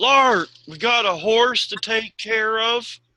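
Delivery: calling out, projected. Narrating a scene where a woman serving drinks yells out a side door, yelling out. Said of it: "she yells out".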